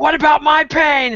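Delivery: squeaky, high, small little cry. Retelling a band member doing curls and mocking Henry: screaming Henry impression. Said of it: "do this Henry impression".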